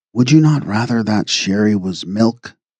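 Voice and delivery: almost a whisper. Reading a story, a man speaking close to a girl's ear: almost a whisper. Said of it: "almost in a whisper".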